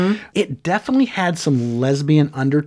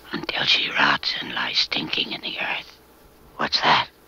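evil demon voice, lower and quieter; 14 semitones lower, 6 dB quieter than usual. Voicing the devil possessing a little girl: horrible devil voice. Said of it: "that horrible, awful, you know, Reagan's voice that comes out of that little girl".

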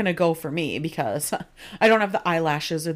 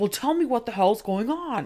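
put-on angry, demanding, high, heated yell; 6 semitones higher than usual. Retelling a TV scene where Dean confronts Rory: imitating Dean yelling. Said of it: "he's, like, yelling at her".

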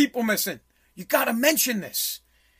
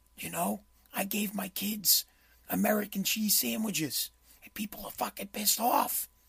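put-on whisper, much quieter and lower; 3 semitones lower, 15 dB quieter than usual. Retelling the president's remarks, as a Joe whispering impression. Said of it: "and he whispers".

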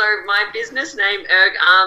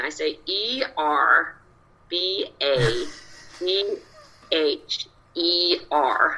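very slow, letter-by-letter spelling in put-on American accent; 3 semitones lower, 6 dB quieter than usual. Spelling out the same surname again: put-on American accent. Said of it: "so I say it with an American accent".

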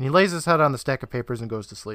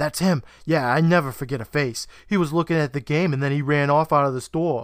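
put-on New Jersey accent throughout. Recapping a scene, voicing Phil pointing at Jimmy, in Phil's New Jersey accent. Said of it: "Wow, great accent".

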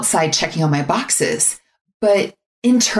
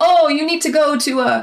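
clumsy fake Italian accent, very high; 9 semitones higher than usual. Retelling what a man at the next table said, in a bad Italian accent. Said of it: "That was my bad example of an Italian accent".

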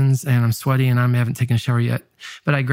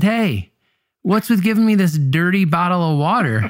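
put-on pitched-up, half-joking, half-mad gripe; 6 semitones higher than usual. Recalling throwing an empty bottle at a man, retelling playful mock anger. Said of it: "Playfully, but also mad".

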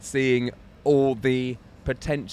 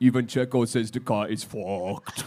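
put-on mild Austrian accent, laid on; 3 semitones lower than usual. Answering a question as Toto Wolff after being asked: Toto Wolff impression, Austrian accent. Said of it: "mildly offensive sort of Austrian accent".

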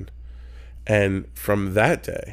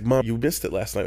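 ordinary talk, nothing marked

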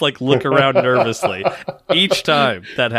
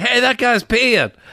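high-pitched shout; 9 semitones higher than usual. Retelling calling out at a pool party: imitating own yelling. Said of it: "I would start yelling".

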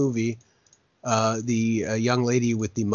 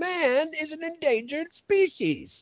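high, slow mock scream. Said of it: "gets up on a soapbox and starts screaming".

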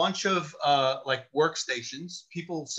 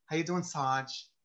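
very, very effeminate speech; 5 dB quieter than usual. Retelling how a coworker greeted people: imitating Rusty Perez's effeminate voice. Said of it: "he spoke very, very effeminately".

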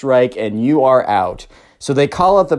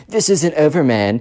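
put-on sullen, moody emo kid voice. Retelling what the emo kid said to Brent: imitating the emo kid. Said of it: "the emo kid's like".

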